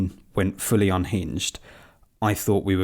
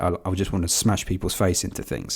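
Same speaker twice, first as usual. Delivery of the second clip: plain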